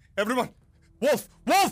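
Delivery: very high-pitched alarmed yell. Narrating the game, a guard spots the wolf and alerts everyone: guard yelling an alarm. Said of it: "And they begin yelling out".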